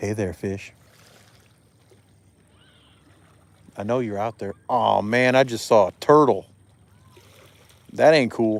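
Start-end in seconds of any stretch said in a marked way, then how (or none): 0.0-4.5 affectionate, swooping, loving sweet-talking voice. Fishing and waiting for a bite, coaxing the fish in a loving voice. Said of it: "Maybe I should use a more loving voice".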